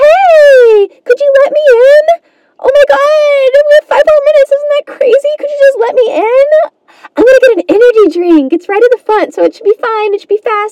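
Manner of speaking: put-on cute, totally naive, very high girly voice. Telling a story, acting out what a girl says to a guy: imitating a cute sweet girl. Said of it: "like a cute sweet girl".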